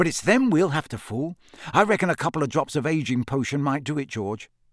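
plain reading voice

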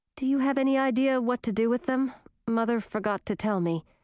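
ordinary delivery

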